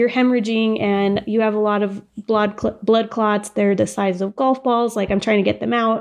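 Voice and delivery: ordinary talk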